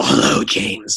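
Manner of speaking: menacing horror-villain voice. Retelling a man on the red carpet greeting the speaker, Freddy Krueger voice. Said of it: "he says in a Freddy Krueger voice".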